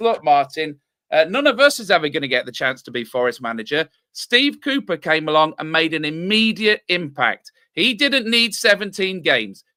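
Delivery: ordinary delivery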